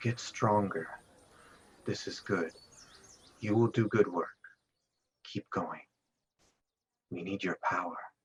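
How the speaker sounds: soft, calm, gentle, soothing female voice. Narrator voicing a patron who speaks to a character during the night, soothing female voice. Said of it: "a soothing female voice saying".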